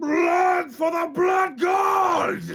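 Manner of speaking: very loud, very high, booming war-cry scream, "god" drawn out. Voicing a champion raising both fists to a crowd: screaming a war cry. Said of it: "and just screams".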